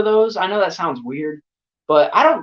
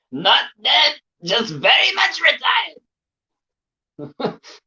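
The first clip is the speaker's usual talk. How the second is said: deliberate, slow, high, drawn-out horror-movie doctor voice; 9 semitones higher than usual. Watching a horror movie and quoting a line: Doctor Loomis impression. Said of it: "I just did the, the impression".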